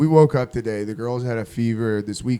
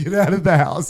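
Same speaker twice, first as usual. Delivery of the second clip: put-on frantic, loud, panicked scream; 5 semitones higher, 5 dB louder than usual. Retelling how she screamed from the front yard during a gas scare, retelling a scream. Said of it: "she's in the front yard screaming at me".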